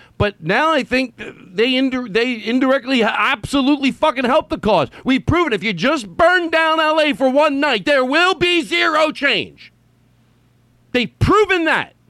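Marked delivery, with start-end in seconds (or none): 5.0-11.9 shouting, higher pitch. Arguing that burning down the city changes nothing: yelling. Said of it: "I'm yelling it because I'm not exaggerating".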